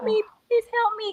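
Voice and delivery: mock sobbing, desperate. Retelling begging a woman for help while crying, retelling a tearful plea. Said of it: "And she was looking at me and I was crying".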